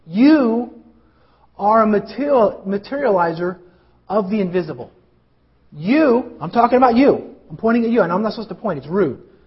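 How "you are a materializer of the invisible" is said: very slow, halting, word by word with breaks. Repeating a quote from a conference to listeners: slow, deliberate delivery. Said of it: "I'm going to say it slowly".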